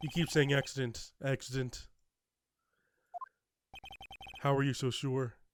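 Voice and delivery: flat, expressionless delivery. Voicing her line in a scene while doing a deadpan voice. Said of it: "I'm doing the deadpan voice anyway".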